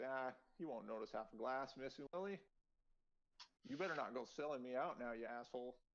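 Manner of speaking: chuckling lightly while talking. Voicing the other guy in the scene, chuckling. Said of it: "he kind of like chuckles and says".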